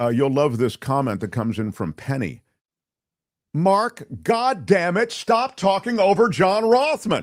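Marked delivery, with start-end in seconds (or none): 3.5-7.2 play-acted high, drawn-out yell. A host reads a listener's comment aloud, mock-yelling a comment. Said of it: "Why are you yelling?".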